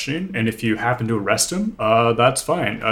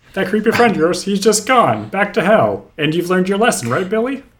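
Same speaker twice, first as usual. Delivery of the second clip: put-on quick, younger-sounding boy voice, slightly higher; 8 semitones higher, 3 dB louder than usual. Speaking to a boy about a Christmas miracle, voice a little higher. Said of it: "your voice is maybe a little higher than it used to be".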